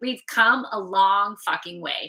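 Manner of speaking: forceful, powerful delivery. Restating the line after saying to say it with some power: said with some power. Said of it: "Say it with some power".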